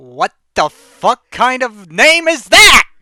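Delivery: genuinely mad, loud, rising angry rant. Reacting to a name just heard: mad. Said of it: "you sound so mad right now".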